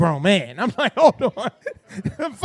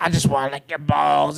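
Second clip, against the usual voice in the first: put-on smoker's voice; 6 semitones lower than usual. Speaker acts out a woman's phone call, in Sheikah's cigar-smoker voice. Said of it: "Sheikah got that like cancer cigar smoker's voice".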